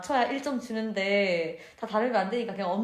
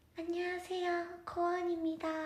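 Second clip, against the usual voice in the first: polite voice with raised pitch; 8 semitones higher, 8 dB quieter than usual. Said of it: "[name] 언니는 안녕하세요 [name]입니다 이렇게 말하고".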